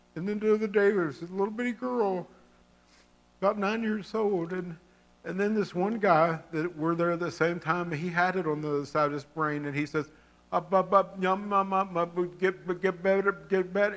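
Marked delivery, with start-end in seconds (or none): 10.5-13.9 play-acted man's impaired way of talking. Telling about a man who had a stroke, imitating a stroke patient's speech. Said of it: "he talks like that".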